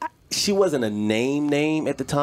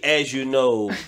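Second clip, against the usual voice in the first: condescending tone. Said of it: "in a very condescending way".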